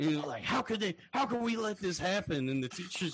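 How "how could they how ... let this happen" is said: high, huffy, indignant outrage. Retelling how a movie character reacts in class: imitating pissed-off huffing and puffing. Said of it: "she gets all pissed off, and she's, like, huffing and puffing".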